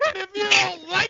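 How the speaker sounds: screamed, in the style of a ring promo. Doing a wrestling promo for listeners, in a Flair screaming voice. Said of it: "in my best Flair screaming voice".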